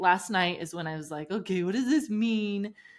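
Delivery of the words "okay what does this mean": heavy, mocking, very sarcastic tone. Speaker reenacting what they thought last night, retelling a sarcastic remark. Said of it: "I was really sarcastic in it".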